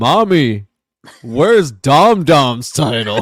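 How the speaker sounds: imitated booming, deep, drawn-out monster voice. Recapping a TV segment, quoting him in a deep Godzilla-like voice. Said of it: "with his deep ass Godzilla voice".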